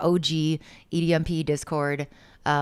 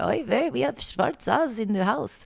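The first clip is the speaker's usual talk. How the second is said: put-on grandma voice; 7 semitones higher than usual.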